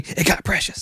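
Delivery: whispered, soft, hushed and breathy. Retelling what was whispered while lying awake at night: imitating a whisper. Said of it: "he whispered to me".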